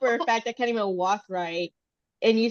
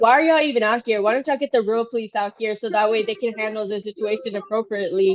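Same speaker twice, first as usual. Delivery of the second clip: ordinary talk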